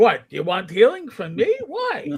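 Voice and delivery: put-on swooping New York accent with rising and falling pitch.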